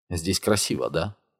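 ordinary delivery

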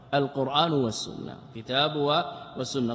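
ordinary talk

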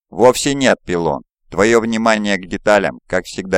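plain reading voice

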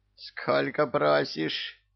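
grating, high, rasping hiss. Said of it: "прошипел Кощей".

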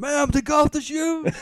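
mock, very high, slow, drawn-out scream. Retelling how a man screamed at a woman, retelling a scream. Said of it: "just screaming at her".

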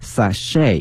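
sachet, American pronunciation, stress on -chet. Explaining american pronunciation: stress on second syllable of sachet. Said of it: "在美式发音当中它的重音放到后面".

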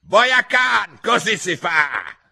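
very high, very slow, shrill, drawn-out shriek. The Queen shrieks at the soldiers. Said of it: "Strillò la regina".

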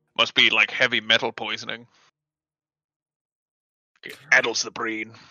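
hushed whisper. Retelling leaning in close to someone to share a remark, whispering. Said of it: "I lean in real close and I whisper".

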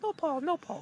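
put-on high-pitched little girl voice. Retelling a phone call a little girl answered, in a high-pitched little girl voice. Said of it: "really high pitched voice".

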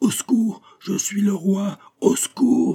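very high, choked, strangled cry of rage. Narrator reads the locked-up king calling for help: choked, shouting with rage. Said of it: "la voix étranglée du roi qui criait avec rage".

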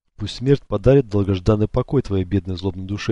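ordinary delivery, nothing marked

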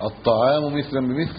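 ordinary talk, nothing marked

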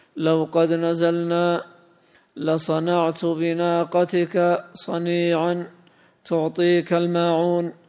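ordinary talk

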